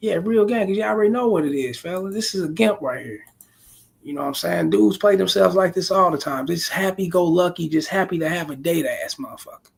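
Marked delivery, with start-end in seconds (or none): 0.0-3.2 mock words chuckled through laughter. Retelling how someone reacted on seeing the date: imitating someone laughing while talking.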